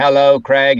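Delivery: high-pitched machine voice. Retelling how a robot sidekick was first voiced: robotic Dalek voice. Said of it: "his version was very robotic".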